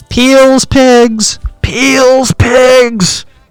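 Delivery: very high, very slow holler, "pigs" stretched out. Retelling how people warned of the passing pigs: imitating people yelling. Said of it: "people would start yelling".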